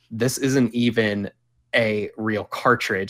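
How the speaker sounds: usual speaking voice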